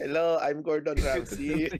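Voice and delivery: put-on Filipino accent on every word, high, loud. A Filipino speaker, handed a name by a co-host, says it in a Filipino accent. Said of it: "You just say it in a Filipino".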